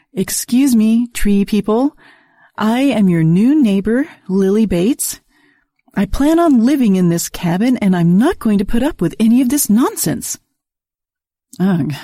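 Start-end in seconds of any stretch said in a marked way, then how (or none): 0.2-10.4 stern, strict, no-nonsense schoolteacher voice. Reading a story where the narrator scolds tree people in teacher voice. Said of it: "used my best teacher voice".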